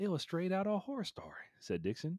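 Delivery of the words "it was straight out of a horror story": put-on Ohio accent, very high pitched. Reading a news story, quoting the person who found the body in an Ohio accent. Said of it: "so I'm going to do the Ohio accent".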